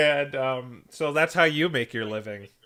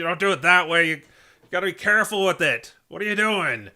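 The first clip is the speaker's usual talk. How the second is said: gruff, loud, pitched-up barking voice; 5 semitones higher, 5 dB louder than usual. Describing a Klefki boss watching you pick a lock, in a gruff Klefki voice. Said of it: "I have a gruff Klefki voice".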